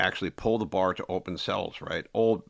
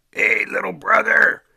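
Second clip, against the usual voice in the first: huge, very high, very loud, rough voice; 12 dB louder than usual. Retelling how a fellow inmate greeted people: imitating Benjamin Peters' huge voice. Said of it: "with a huge voice".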